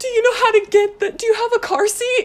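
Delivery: put-on frantic tone, very high and loud. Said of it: "he's just, like, frantic".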